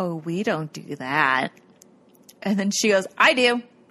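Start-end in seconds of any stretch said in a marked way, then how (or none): 0.0-1.5 low, slow, dry, flat sarcastic deadpan. Retelling how he answered her while looking at the camera: retelling a deadpan line. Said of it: "he deadpans the camera and he goes".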